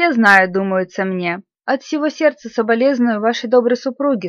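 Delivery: plain reading voice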